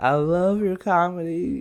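very slow, drawn-out delivery. Retelling what a girl said after a show, imitating how she talks. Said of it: "That's how she talks".

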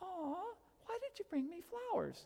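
put-on, very high, swooping, touched woman's voice. Acting out what a woman says when handed flowers at the door: imitating a woman receiving flowers. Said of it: "what every woman says when a guy shows up".

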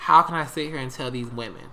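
usual speaking voice

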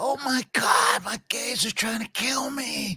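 very high, very slow drawl, every word stretched. Doing an impression for the others after being asked to: Jennifer Coolidge voice.

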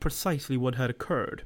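plain

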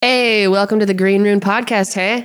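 put-on Canadian accent, Canadian-style "hey". Welcoming listeners to the podcast: imitating Canadian speech. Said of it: "That's how they say it up in Canada".

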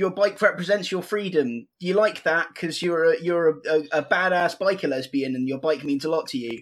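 ordinary talk

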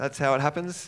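really heavy, bad sarcasm. Describing how the story ends, deliver it with really bad sarcasm. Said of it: "there's my really bad sarcasm again".

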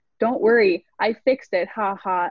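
normal talking voice

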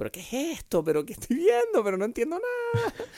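very high, swooping, scoffing laughter mixed with talking. Retelling watching a recommended film she disliked, retelling laughing out loud mockingly. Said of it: "riéndome en voz alta, ¿sabes?, burlándome".

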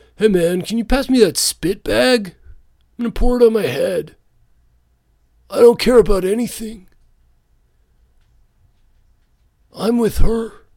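very high, drawn-out voice of the idle rich. On a podcast about COVID, doing an impression of the rich. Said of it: "this is my impression of the rich".

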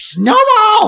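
shrill, high screeched word. Showing how they yell it while watching things, screeched "snowball!". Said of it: "But I don't say it calmly. I screech it".

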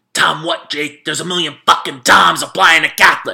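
furious in-your-face loud angry bark. Recounting a guy yelling in his face in the library: retelling an angry yell. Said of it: "This like angry little guy is yelling at me".

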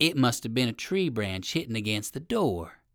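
plain reading voice

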